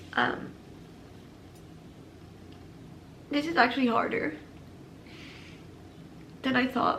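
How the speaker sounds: near whisper, hushed and breathy, fighting back tears. Speaker not ready to explain what happened, holding back tears. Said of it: "I'm trying not to cry".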